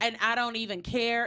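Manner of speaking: ordinary talk, nothing marked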